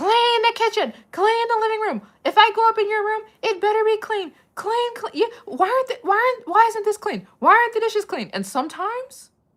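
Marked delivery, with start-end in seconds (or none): 0.0-8.3 shrill, very high, loud nagging yell at full tilt. Retelling how a mother came home demanding a clean house: imitating mom yelling. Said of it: "my mom would start yelling at us".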